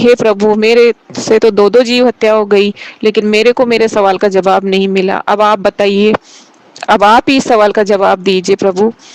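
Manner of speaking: ordinary delivery, nothing marked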